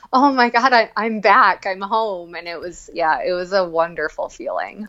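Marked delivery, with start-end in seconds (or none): 0.1-2.3 mock joyful exclamation through laughter. Retelling own words while running after a hard year: retelling own laughing exclamation. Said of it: "laughing as I was running".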